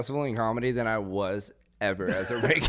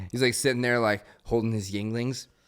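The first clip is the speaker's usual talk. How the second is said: plain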